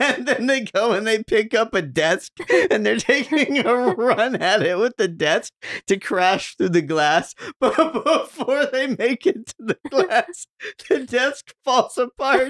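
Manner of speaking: breaking down, wheezing with laughter, very high. Describing a scene to listeners while wheezing with laughter. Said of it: "tries to describe scenes while like breaking down, wheezing, laughing".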